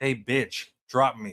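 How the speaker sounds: forced, put-on tough voice. Arguing with someone who keeps muting them, trying to sound tough. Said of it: "please don't try to sound tough".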